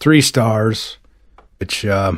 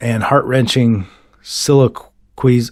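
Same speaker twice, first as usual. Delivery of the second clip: ordinary talk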